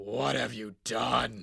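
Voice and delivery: very loud, slow, deliberate, scary, intimidating bellow. Retelling a phone call from Vince, doing a Vince impression. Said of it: "that's a good impression".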